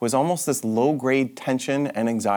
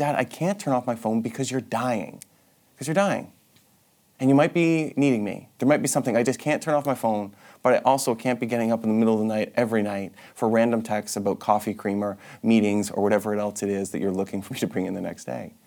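normal talking voice

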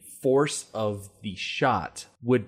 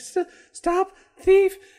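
mousy little voice, much higher and louder; 7 dB louder than usual. Describing a Police Academy character trying to be intimidating, in Laverne Hooks' mousy little voice. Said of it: "she had this mousy little voice".

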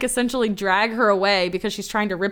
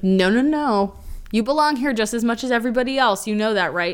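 ordinary talk

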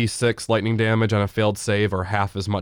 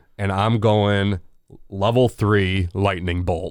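ordinary talk

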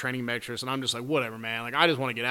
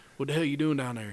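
put-on Tennessee hillbilly accent; 2 semitones higher than usual. Retelling a stranger calling down to him, in a hillbilly Tennessee accent. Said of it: "he was like some hillbilly from like Tennessee".

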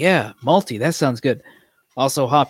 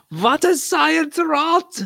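put-on German accent, higher. Picturing a German drinker asking a question: imitating a German speaker. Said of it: "just some German. They're going".

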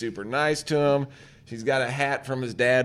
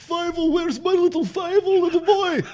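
put-on Russian accent, pitched much higher; 5 dB louder than usual. Speaker recapping a movie, acting out the mouse's parents calling for him, imitating Fievel's parents. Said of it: "they talk like this".

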